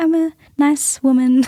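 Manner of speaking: very slow, polite high voice. Showing how women talk to sound polite: high-pitched polite voice. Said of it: "talk like this and talk up here".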